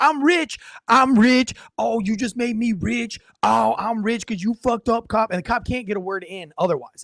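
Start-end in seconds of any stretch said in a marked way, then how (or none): 0.0-5.3 mock nonstop drugged-up, high-pitched repeated yelling. Retelling a drugged man yelling at an officer: imitating a man yelling. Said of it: "he keeps yelling".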